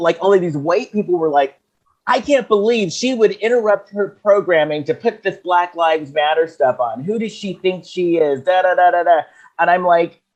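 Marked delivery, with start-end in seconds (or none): none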